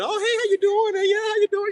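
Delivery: very high, gushing, overly loving voice. Joking about how some people greet you: imitating overly loving greeting. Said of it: "they just so loving".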